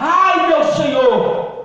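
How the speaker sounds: loud, slow, drawn-out calling cry. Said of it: "ele gritou".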